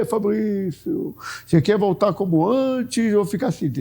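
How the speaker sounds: high heavenly proclaiming voice. Speaker imagines God speaking to him today, in the voice of God. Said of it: "com aquela voz de Deus".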